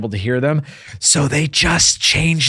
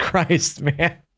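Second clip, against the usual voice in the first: normal talking voice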